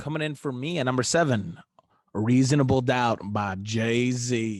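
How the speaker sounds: casual, down-home country-style accent. Counting down a ranked album list, announcing number seven in a country accent. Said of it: "I said that in like a country accent".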